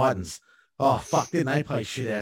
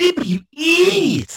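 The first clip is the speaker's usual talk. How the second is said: very high, shrill, loud screech; 9 dB louder than usual. Speaker showing the group an impression from a show, Ren impression. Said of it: "I got a really good Ren impression".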